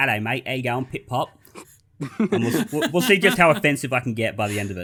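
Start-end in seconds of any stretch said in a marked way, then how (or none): 0.0-1.3 badly done put-on Cockney accent.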